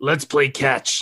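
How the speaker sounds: throaty voice pushed from the throat. Imitating a coworker who sounded like that: imitating a coworker's voice. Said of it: "One of our coworkers sounded like that".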